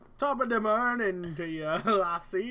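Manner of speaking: put-on, fake Irish accent. Joking about a character who should be Irish but acts Italian, give his greeting in a put-on Irish accent. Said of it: "He's not really acting Irish".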